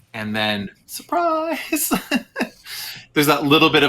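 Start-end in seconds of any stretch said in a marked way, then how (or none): 0.8-1.9 high manic burst of laughter. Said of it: "a kind of a manic laugh".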